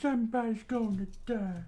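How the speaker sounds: put-on voice of an elderly man. Trying out different character voices, the speaker switches to an old man voice. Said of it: "old man voice".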